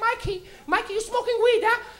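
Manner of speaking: very high, funny, knowing, playful calling voice. Retelling a mom knocking and catching someone smoking: imitating mom. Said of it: "So she'd be like".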